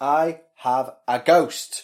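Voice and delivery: very loud, slow, drawn-out shouting. Reading out the title of a forum post, shouting. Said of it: "Why are you shouting it again?".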